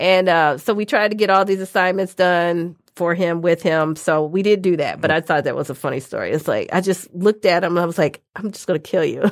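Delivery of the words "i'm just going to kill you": put-on quiet, serious, threatening tone. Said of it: "because I was so quiet".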